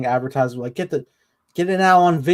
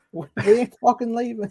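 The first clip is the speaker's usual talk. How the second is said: put-on New Zealand accent with the pitch raised; 8 semitones higher, 3 dB quieter than usual. Quoting a line from the show in a New Zealand accent as Omega. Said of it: "how do I do a New Zealand accent to say it?".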